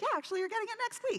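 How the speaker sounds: playful, very high-pitched, rattled off quickly. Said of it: "I'm like".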